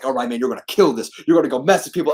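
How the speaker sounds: loud, pumped-up, hyped-up voice. Retelling a pre-match ritual of hyping oneself up: imitating muttering under breath. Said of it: "I'll just start talking under my breath".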